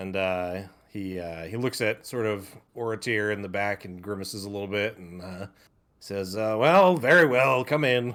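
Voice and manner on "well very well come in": loud, haughty, arrogant voice.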